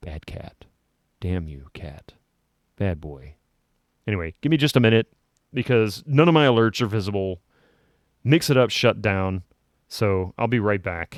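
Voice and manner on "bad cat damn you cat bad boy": very quiet yelling, hushed and soft scolding tone. Scolding the cat that stepped on the power button: yelling very quietly. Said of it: "I'm gonna yell very quietly at the cat".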